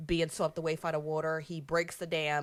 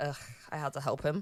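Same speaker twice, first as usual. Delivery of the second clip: mock grudging sigh, quieter; 5 dB quieter than usual. Retelling a movie scene where a cub sighs before helping: imitating a reluctant sigh. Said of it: "this little sigh of like".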